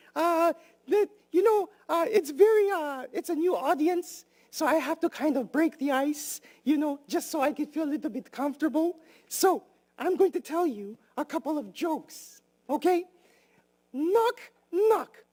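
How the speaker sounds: put-on very high-pitched kids-show style character voice. Greeting the audience as the character and telling a joke: Grover voice. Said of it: "My name is Grover from Bodie Street".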